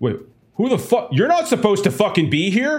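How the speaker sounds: startled, very high, swooping caught-off-guard outburst. Describing a man who gets up from a counter and spots intruders: voicing a startled man at a counter. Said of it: "a man gets up, ... it's like".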